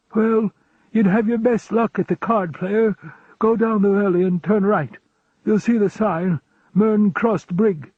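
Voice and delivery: put-on wheezy old man voice. Reading an old man giving directions to an inn: wheezy voice. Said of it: "in a wheezy voice".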